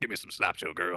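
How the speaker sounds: rough, gritty, grisly put-on voice. Showing how a joke line sounds done in a put-on voice: grisly voice. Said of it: "a grisly voice".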